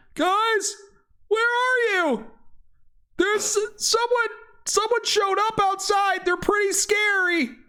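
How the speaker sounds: very high, shouting unicorn character voice. Voicing a unicorn calling out to the group: unicorn shouting. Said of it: "the unicorn shouting out".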